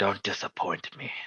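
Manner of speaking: very quiet, hushed, close-in whisper. Describing Corvus leaning into you, voicing his line as Corvus whispering. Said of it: "falls into you and whispers".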